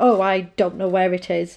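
put-on annoyed woman voice. Retelling what a woman said while searching: imitating an annoyed woman. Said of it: "so annoyed".

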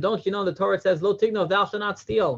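high screaming, scolding tone. Retelling a kibbutznik who keeps yelling at a boy eating an apple, retelling a kibbutznik screaming. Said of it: "the guy's still screaming at him".

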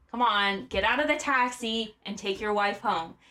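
ordinary talk, nothing marked

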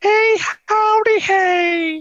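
very high, loud, bouncy cartoon voice, hey stretched out. Signing off the episode with a catchphrase: Mister Hanky voice. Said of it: "that was Mister Hanky, the Christmas poo".

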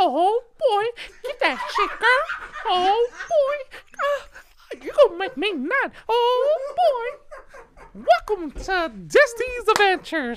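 squeaked out, high pitch and loud. Asked by a woman to talk like Mickey Mouse, the speaker does a Mickey Mouse voice. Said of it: "talk to me like Mickey Mouse".

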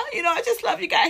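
high, teary, snot-crying sobbing gush. Retelling a super fan calling in to a live show, imitating someone sobbing. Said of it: "he was like snot crying and everything".

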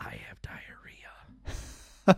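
whispered, earnest, hushed, dead-serious delivery. Retelling a childhood moment, whispering to mom across the table: retelling a whisper. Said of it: "and I whispered to my mom".

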